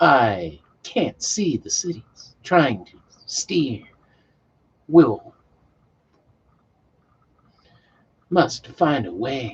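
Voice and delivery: put-on, big dramatic voice, slow, swooping, drawn out. Rereading the lines aloud, doing a William Shatner voice. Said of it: "I couldn't help but read that in a Shatner voice".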